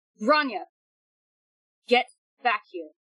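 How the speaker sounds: pointed and sharp, short of yelling. Mordico calls Grania back over the totem phone, saying it pretty sharply. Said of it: "Say pretty sharply over the totem phone".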